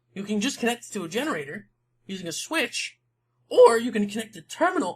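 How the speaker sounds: voice breaking and cracking mid-sentence. Explaining game features to viewers: voice cracking. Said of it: "that voice crash crack".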